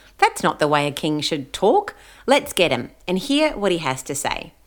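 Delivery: ordinary delivery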